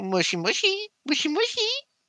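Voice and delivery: put-on very high, sing-song, cutesy cooing baby talk. Speaker imitating how they talk to their cat Gato, in a mock cutesy pet-talk voice. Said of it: "like very cutesy".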